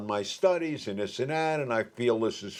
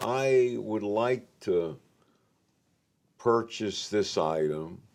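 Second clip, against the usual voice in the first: soft, gentle, slow and unhurried; 2 semitones lower than usual. Showing how to respond while negotiating to buy an item, soft, slow tone. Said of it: "please note that my I my tone is soft. I slow up".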